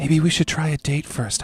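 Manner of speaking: whispering in a put-on character voice. Voicing a character who leans down and whispers to a player: whispering in character. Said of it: "she comes down and whispers next to you".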